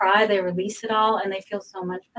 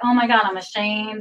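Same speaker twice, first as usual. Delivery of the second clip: ordinary talk, nothing marked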